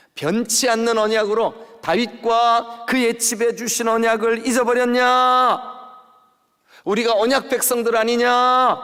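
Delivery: loud, high-pitched shouting, rebuking tone.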